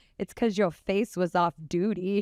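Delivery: normal talking voice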